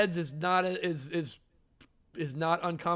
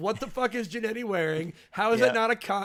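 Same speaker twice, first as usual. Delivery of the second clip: ordinary talk, nothing marked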